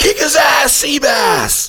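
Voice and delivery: very high, drawn-out heckling yell. Retelling breaking a silent crowd's hush as a golfer left the tee, retelling own yell. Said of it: "I break the silence by yelling".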